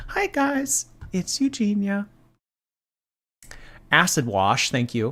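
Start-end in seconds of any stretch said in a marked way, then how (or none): 0.1-2.1 odd put-on voice, very high and slow. Answering a viewer's request to say the line: weird voice she randomly does. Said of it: "with that weird voice that you randomly do?".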